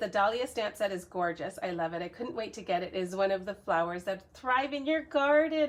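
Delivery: ordinary talk, nothing marked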